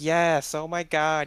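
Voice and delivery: put-on high, drawn-out high school girl voice. Retelling how a man reacted, imitating a high school girl voice. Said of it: "He sounded like a high school girl".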